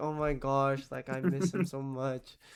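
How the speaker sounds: play-acted smitten, daydreaming, dreamy lovesick tone. Imitating a speaker who is dreaming of him: mock dreamy lovesick voice. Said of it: "straight up thinking of him and be like".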